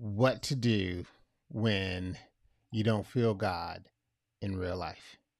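very deep, broken-up, solemn phrasing. Host turning to a serious topic for listeners, in a lowered somber voice. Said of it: "Let me bring my rate down to a somber time".

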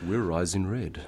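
put-on radio dj announcer voice. A band signing off on a radio station, putting on the radio voice. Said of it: "got to get the radio voice on".

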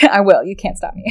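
plain

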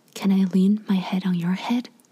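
hushed, whispering voice. Reading a listener's date story aloud, the date's line: whispering. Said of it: "he whispers".

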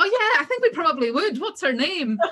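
completely sarcastic, high, swooping delivery. Retelling their reply to a woman who asked about her friend: retelling a sarcastic reply. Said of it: "we were being completely sarcastic".

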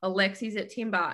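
ordinary talk, nothing marked

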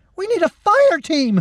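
very high, voice-cracking, panicked hysterical scream. A soldier calls for help as a troll attacks; hysterical scream, voice cracking. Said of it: "screamed a soldier, hysteria cracking his voice".

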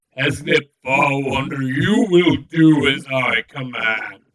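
authoritative, distorted-sounding tone. A commanding figure speaks into the listeners' minds, booming voice. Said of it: "His voice booms out through your mind".

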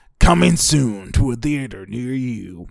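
dramatic movie-trailer announcer voice. Announcing something coming soon to theaters, in a movie-trailer voice. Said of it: "I want to do the movie voice".

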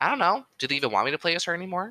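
high, rushed, imitated unsure tone. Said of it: "She actually fucking said that in that exact tone".

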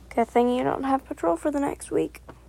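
plain

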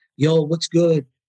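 put-on tough street-kid style speech. Describing a kid heard on the other phone line, the speaker imitates him. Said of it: "Sound like a total typical gangbanger".

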